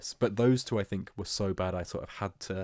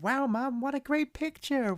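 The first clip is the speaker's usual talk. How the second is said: put-on cartoon girl voice, pitched higher. Retelling a Simpsons tie-in video where Lisa leaves the cinema: Lisa Simpson voice. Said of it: "Lisa was going like".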